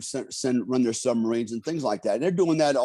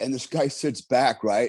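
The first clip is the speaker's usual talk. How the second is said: normal talking voice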